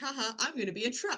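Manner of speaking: lighthearted, playful, acted-out joking tone. Retelling how the actor joked with his brother: imitating someone joking around. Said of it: "he was joking around with his brother, like".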